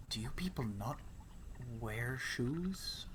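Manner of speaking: very quiet, close, hushed, gasping whisper. Leaning in really close to someone not wearing shoes, whispering. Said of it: "I like get in really like close and I whisper".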